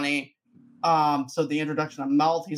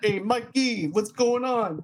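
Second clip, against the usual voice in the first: high, pitched-up, drawn-out cartoon voice; 7 semitones higher than usual. Quoting a movie character's greeting: Raphael from Ninja Turtles voice. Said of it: "Kind of sounds like Raphael from".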